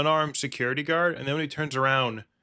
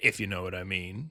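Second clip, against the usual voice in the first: put-on mobster voice, lower, quieter; 6 semitones lower, 6 dB quieter than usual. Acting out a character's lines and tagging a phrase on, mafia guy impression. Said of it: "sounds like he's doing an impression of a mafia guy".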